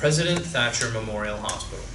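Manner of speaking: plain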